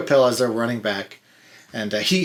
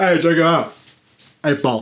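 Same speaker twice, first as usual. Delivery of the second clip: smug, pleased, pitched-up show-off voice; 6 semitones higher, 4 dB louder than usual. Speaker recalls a Seinfeld scene, doing a Patrick Warburton douchey impression. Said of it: "He's such a douche in that show".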